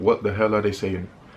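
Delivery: ordinary delivery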